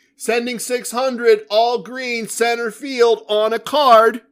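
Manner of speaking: put-on, exaggerated, high, showy announcer-style call. Retelling what he called out in front of the pit boss, overly loud voice. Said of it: "in my overly loud voice".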